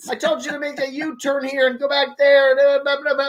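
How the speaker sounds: mock furious, angry shouting. Joining in acting out the angry map directions lady: mock yelling at the driver. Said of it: "Yells at him".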